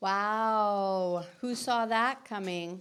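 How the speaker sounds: dripping with sarcasm. Answering news of a family fight with a quip: dripping with sarcasm. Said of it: "Your sarcasm is dripping off of you".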